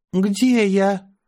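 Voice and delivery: quavering, shaky voice. A narrator reads a character's first words on waking, trembling voice. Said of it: "дрожащим голосом произнесла Аня".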